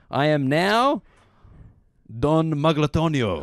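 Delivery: drawn-out, hammed-up put-on Spanish accent. Reading out a written resolution as instructed: Spanish accent. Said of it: "say with a Spanish accent".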